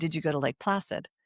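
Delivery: put-on whisper. Retelling a question asked a visitor after waking from a coma: retelling a whisper. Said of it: "and I whispered to him".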